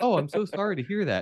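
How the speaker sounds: high-pitched, syrupy, apologetic tone.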